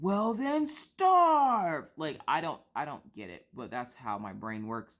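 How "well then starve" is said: high yell with the word starve drawn out. Retelling own reaction when a child skips dinner: Beast from Beauty and the Beast voice. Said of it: "I turn into the Beast from Beauty and the Beast".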